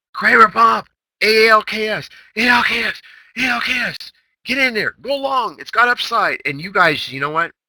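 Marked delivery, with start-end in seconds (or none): 0.2-6.5 very high, loud, drawn-out, shrill scream. Retelling calling out a trade to the room: retelling own scream. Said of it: "He screams".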